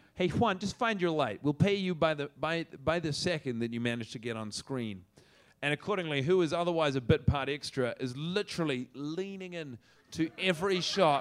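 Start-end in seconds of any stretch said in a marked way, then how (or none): 0.2-5.1 put-on American accent. Retelling what a director told an extra: imitating an American accent. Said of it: "'cause he's American".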